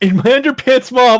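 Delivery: very high, loud, fear-filled, frightened voice. Quoting a movie character's line while watching: imitating a fearful voice. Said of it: "you hear the fear in his, in his voice".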